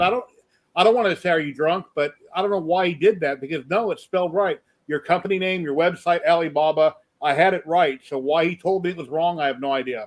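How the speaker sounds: plain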